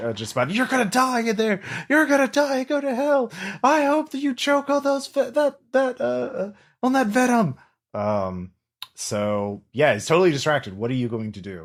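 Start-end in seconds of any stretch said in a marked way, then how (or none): 0.5-7.6 very high, shrieking, enraged scream. Voicing an enemy distracted and screaming at the party: screaming in absolute rage. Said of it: "screaming, uh, in absolute rage".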